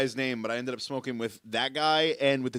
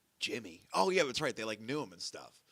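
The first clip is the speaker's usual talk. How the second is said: normal talking voice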